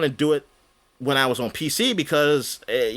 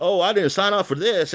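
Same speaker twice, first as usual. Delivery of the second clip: mock complaining, higher; 5 semitones higher than usual. Retelling what crew members on the ship said: imitating crew complaining. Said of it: "I just hear everybody complaining on my ship".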